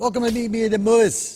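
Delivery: sped-up, high-pitched rattle. Opening Meet Me at the Movies with a welcome, said really fast. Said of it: "I said it really fast".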